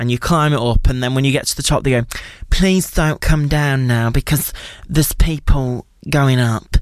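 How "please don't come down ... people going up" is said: mock patronizing, condescending public-address announcer voice. Recalling tower staff calling over the tannoy, mock-condescending announcer voice. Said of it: "that was a very condescending impression".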